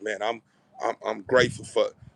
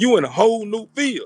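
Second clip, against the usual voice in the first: emphatic, hyped, higher and louder. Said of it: "That's because you in a whole new field".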